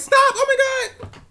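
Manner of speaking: very high, very loud, shrill woman's shriek.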